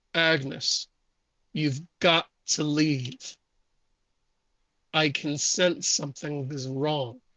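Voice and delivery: otherworldly, ghostly, spectral voice. Storyteller voicing a ghostly voice coming from an amulet. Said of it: "you can hear a ghostly voice emanating from the amulet".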